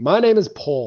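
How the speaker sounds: slightly too loud. Voicing a character announcing their name on a platform: a little too loud. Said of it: "maybe just a little too loud".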